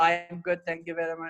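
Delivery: level, flat monotone with no pitch change. Showing how a same-tone speaker gets boring: flat unchanging pitch. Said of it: "The tone is always the same".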